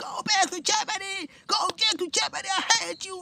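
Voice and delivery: put-on, shrill, very high, all-out screaming. Retelling what a neighbor screamed after the police left: imitating someone screaming. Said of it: "she starts screaming".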